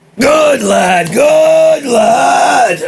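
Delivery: put-on high, loud old sea captain shout.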